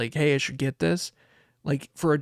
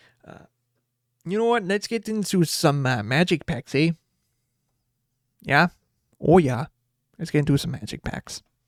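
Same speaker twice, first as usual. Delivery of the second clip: put-on northern Midwestern accent. Opening card packs on stream in a midwest northern voice. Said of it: "that Midwest northern voice".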